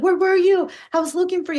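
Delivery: play-acted, worked-up and upset, very high voice. Recounting what she said when finally found after getting lost at pride, imitating someone upset. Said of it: "she was so upset".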